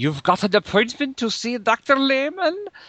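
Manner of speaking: put-on high, swooping, campy evil German accent. Imitating the hotel doorman who answers the door: evil, slightly german accent. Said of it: "he has some evil accent, maybe something slightly German".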